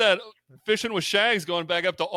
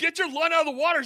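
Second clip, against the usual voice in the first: put-on screaming, higher pitch. Retelling a fishing moment, screaming at him: retelling own screaming. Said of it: "I'm screaming at him".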